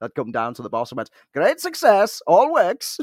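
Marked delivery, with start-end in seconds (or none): 1.3-3.0 high, loud celebratory delivery, pitched way up, announcer-like. Retelling telling the boss a projector fix worked: Borat voice. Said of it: "Borat, I will be known to say".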